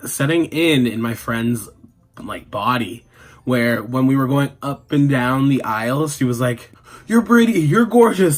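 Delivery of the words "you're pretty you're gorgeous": play-acted drunken gushing, shrill, very high. Retelling a tipsy friend complimenting every lady: imitating drunk friend. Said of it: "the alcohol must have been setting".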